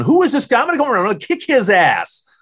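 very high, shrill, swooping, enraged screaming. Acting out a woman's call to the radio station's program director, imitating someone screaming. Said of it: "she's just screaming at Leslie Fram going".

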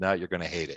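ordinary delivery

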